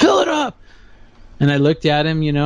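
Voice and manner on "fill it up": mock very high, shrieking scream. Retelling a man at a gas station: imitating a man screaming. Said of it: "And he's screaming".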